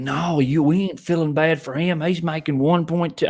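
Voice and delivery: put-on country accent. Retelling what people say when you argue about a coach, in a country accent. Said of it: "I always go to a country accent".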